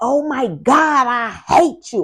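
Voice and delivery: very slow, high, loud drawn-out shrieking scream. Recounting his youngest daughter's outburst during a tour, retelling a scream. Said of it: "she was screaming at the top of her lungs".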